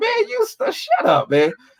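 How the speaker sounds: excited, dismissive tone, pitched very high.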